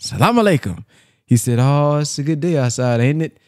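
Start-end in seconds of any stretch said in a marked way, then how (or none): 0.0-0.8 mock stern, firm, pitched-up delivery. Retelling a minister's lecture on greeting the sisters, retelling a firm greeting. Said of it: "you better say it with some firmness".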